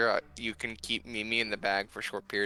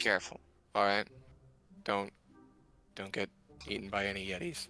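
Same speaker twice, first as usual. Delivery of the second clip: level, flat, deadpan monotone delivery; 2 semitones lower, 4 dB quieter than usual. In a role-play, telling the others to be careful, in a flat monotone. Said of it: "I have very monotone voice".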